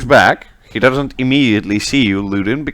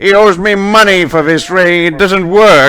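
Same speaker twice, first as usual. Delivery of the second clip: shrill, very high, loud shouting; 9 semitones higher, 5 dB louder than usual. Voicing a second guard complaining about a ring: other guard shouting. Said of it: "the other one shouts".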